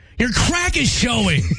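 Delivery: irritated angry tone. In a game of saying one phrase in set tones, the speaker uses an angry tone. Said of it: "You say it in an angry tone".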